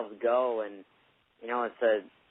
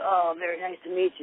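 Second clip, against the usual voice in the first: hoarse, rasping voice, a touch high; 8 semitones higher than usual. Retelling meeting a wrestler named Luna: imitating Luna's raspy voice. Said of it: "had that graspy voice".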